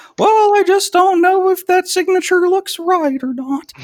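put-on very high-pitched elderly woman voice. Mocking a 70-year-old woman holding up a checkout line: old lady voice. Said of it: "you're just using that voice".

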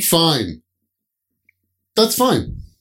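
sarcastic, swooping sing-song "fine". Showing how the word fine can sound: sarcastic "fine". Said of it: "That's a sarcastic way".

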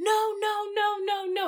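despairing wailing scream.

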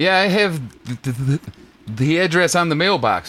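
ordinary talk, nothing marked

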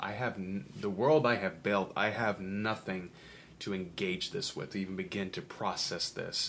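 normal talking voice

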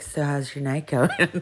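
creepy, unnaturally low, forced would-be seductive voice. Retelling a man on a bus trying to be seductive: imitating an unnaturally low seductive voice. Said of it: "making it unnaturally low".

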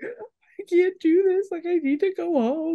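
very high-pitched, slow, sobbing bawling wail. Recounting texting her boss from the parking lot; retelling saying it while bawling. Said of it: "And I'm bawling".

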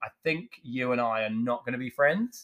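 ordinary talk, nothing marked

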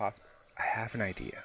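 whispering as quietly as possible. Player in character whispers an idea to a companion, as quietly as possible. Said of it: "I'm whispering as quietly as possible".

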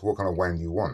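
ordinary delivery

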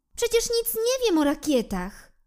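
very high, anxious, worried, fretting voice. Narrator reading the giraffe's reply to the jackal, worried. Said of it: "Bibi wydawała się zaniepokojona".

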